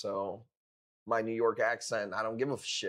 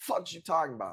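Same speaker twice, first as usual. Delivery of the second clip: put-on, high New York street accent; 6 semitones higher than usual. Doing their best impression of a New Yorker, put-on New York accent. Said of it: "Let me do my best impression of a New Yorker".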